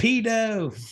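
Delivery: put-on shrill, very high, drawn-out kid's yell. Retelling a kid at a playground yelling at a passerby: imitating a kid yelling. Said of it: "just yells".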